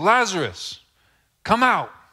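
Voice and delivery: very loud, very high, shrill yell. Reading a passage aloud: yelled loudly. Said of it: "I yelled".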